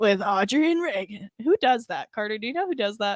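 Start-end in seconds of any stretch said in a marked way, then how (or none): 0.0-1.3 big, show-intro-style radio announcer delivery. Imitating the show's announcer who introduces the show: radio announcer voice. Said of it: "as cool as the little announcer guy".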